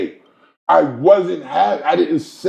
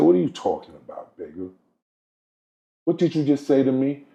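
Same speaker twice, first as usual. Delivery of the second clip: mock grave, dead-serious, no-nonsense tone; 2 semitones lower, 5 dB quieter than usual. Retelling what a friend said after a remark: imitating someone speaking very seriously. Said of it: "he spoke to me very serious".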